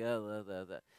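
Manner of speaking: flat droning, very low and very quiet. Showing how people read the Bible in their heads: mock monotone reading voice. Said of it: "the monotone inner voice".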